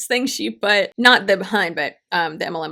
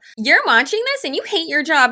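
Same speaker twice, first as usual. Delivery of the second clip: snide, mocking, high-pitched woman's voice; 7 semitones higher than usual. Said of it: "that was a really good impression".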